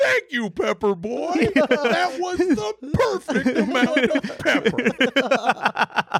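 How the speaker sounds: grand, swooping, very slow, very high, over-the-top. Retelling a comedy sketch line to friends: imitating a huge delivery. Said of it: "just so huge".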